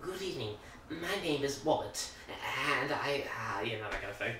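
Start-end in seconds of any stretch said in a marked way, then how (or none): 0.0-3.2 put-on sweet, cute lisping accent, every r softened into w. Imitating the hedgehog character Robert: Robert the hedgehog voice. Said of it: "he's got the cutest little accent".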